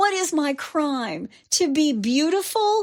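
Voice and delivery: mock high scream. Retelling how a defendant stood up and tossed her hair: imitating someone screaming. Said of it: "and screamed".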